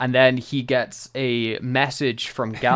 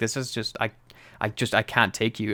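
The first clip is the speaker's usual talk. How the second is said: put-on quiet whisper; 3 dB quieter than usual. Retelling an actor's line from an episode: imitating Tom Baker quietly whispering. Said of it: "just quietly whispering".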